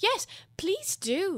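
pleading. Alice joins the March Hare's request to the Dormouse, pleading. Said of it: "pleaded Alice".

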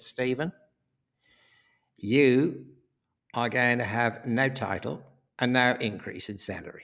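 strongly Australian announcer-style speech. Retelling what the boss said, in an imitation of Bruce's Australian accent. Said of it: "he said in that very Australian".

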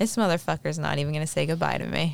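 ordinary delivery

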